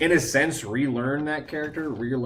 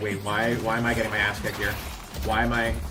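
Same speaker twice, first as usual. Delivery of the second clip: usual speaking voice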